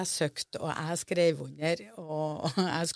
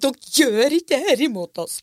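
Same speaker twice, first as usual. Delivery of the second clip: intense, high, very loud screaming; 8 semitones higher, 12 dB louder than usual. Retelling standing firm against bureaucratic replies on the phone, retelling screaming into the phone. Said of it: "satt jeg skreik i".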